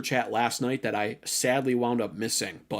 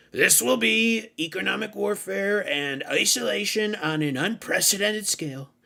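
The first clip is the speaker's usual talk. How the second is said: high voice, read with amusement; 9 semitones higher than usual. Reading out an announcement for amusement in an imitation of his voice. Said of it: "I'll read it in his voice for your amusement".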